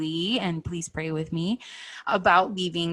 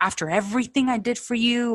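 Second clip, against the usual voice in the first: mock-angry spewing outburst, higher; 4 semitones higher than usual. Retelling a man's defensive reaction to her plan to mend her marriage, retelling angry spewing. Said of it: "he started spewing things like".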